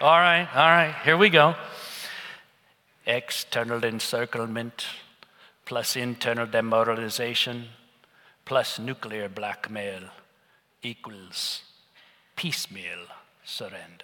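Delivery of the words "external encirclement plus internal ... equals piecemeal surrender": deep, low, thick German accent. Showing the audience an impression in a thick German accent: Henry Kissinger impression. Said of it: "my Henry Kissinger impression".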